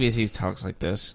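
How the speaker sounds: low, soft, flat monotone.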